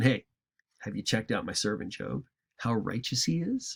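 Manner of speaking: dry, soft, mocking, casual sarcastic tone. Retelling God's words to Satan, being sarcastic to make it funny. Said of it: "I'll be a little bit sarcastic with this to make it funny".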